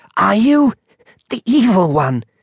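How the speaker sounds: whispering hoarsely. A monk stares up at mr. jones in horror and whispers hoarsely. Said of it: "he whispered hoarsely".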